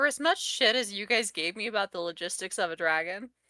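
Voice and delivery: plain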